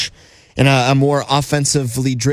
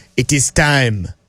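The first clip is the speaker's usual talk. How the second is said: put-on wise old baboon voice, like an old sage. Radio host on Steelers Nation Radio opens the next segment in a Rafiki voice. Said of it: "I did that in the Rafiki voice in The Lion King".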